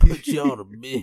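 put-on mumbling drawl. Speaking to listeners hearing this late at night, doing a Sling Blade voice. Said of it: "I had the Sling Blade voice done".

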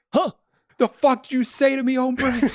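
put-on very high-pitched New Jersey accent. Acting out a film character who loses his Mexican accent, in a New Jersey accent. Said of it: "He talks like someone from New Jersey".

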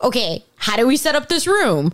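normal talking voice

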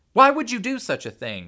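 very high, very loud shouting. A woman grabs him by the shoulders and shakes him: shouted into his face. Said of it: "She shouted into his face".

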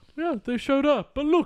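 put-on high, laughing, bumbling old man voice.

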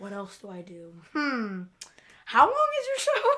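play-acted, cheeky, sassy, sing-song teasing tone. Retelling Natalie's reply when asked what else she does: imitating Natalie's sass. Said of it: "I put Natalie sass".

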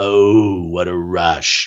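deep, guttural voice, very slow and drawn out. Saying a podcast catchphrase: Road Warrior Animal impression. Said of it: "getting that guttural, deep voice sound".

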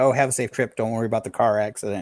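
plain

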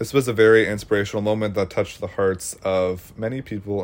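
ordinary talk, nothing marked

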